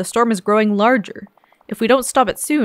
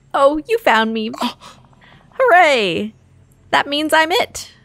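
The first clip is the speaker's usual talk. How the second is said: high-pitched, terrible cartoon snowman voice; 5 semitones higher than usual. Voicing the character who has just been found, in a bad Olaf voice. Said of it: "my Olaf voice is terrible".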